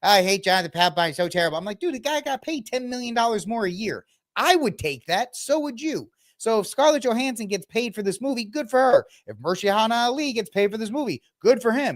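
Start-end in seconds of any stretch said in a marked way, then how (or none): 0.0-1.6 put-on thick Boston accent. Imitating other Red Sox fans after his favorite closer left: imitating Red Sox fans' accent. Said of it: "they're all in their accent".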